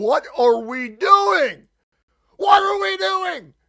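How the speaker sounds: very loud, shrill, swooping, rising yell. Playing a card game with other players, yelling. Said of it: "Sorry for yelling".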